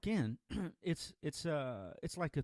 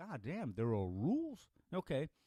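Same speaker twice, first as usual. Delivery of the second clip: plain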